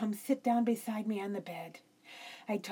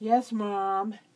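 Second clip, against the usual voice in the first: plain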